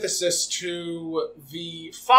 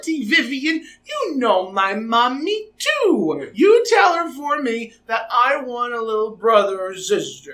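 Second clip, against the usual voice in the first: put-on overtly cutesy, high, sing-song baby voice; 6 semitones higher, 3 dB louder than usual. Retelling someone's put-on voice in a talk about a little brother or sister, cutesy baby voice. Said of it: "overtly cutesy baby type voice".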